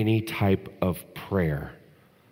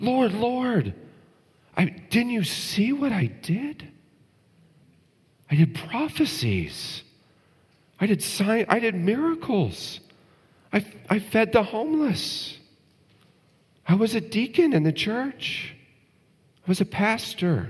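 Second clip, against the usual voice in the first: mock surprised pleading, higher. Acting out people pleading with the Lord: acting out surprised pleading. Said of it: "Do you hear the surprise in their voice?".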